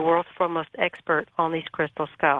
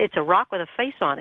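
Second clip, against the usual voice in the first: ordinary talk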